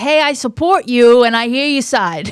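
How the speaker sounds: put-on friendly New York accent. Thanking a caller, contrasting how they answer people, in a friendly New York accent. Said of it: "friendly New York accent people".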